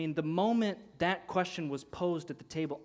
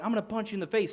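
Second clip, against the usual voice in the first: put-on, raging-mad, pitched-up, fighting tone; 5 semitones higher, 4 dB louder than usual. Showing how a shop argument used to end: imitating someone raging mad. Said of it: "raging mad".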